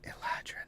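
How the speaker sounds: whispering under breath. Voicing a character who says a secret word: whispering quietly under her breath. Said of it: "whispers quietly under her breath".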